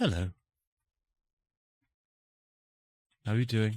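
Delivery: mild, gentle-voiced, calm. Voicing a character who appears silently beside a player: very quiet Mistra voice. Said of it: "very, very silently. She says".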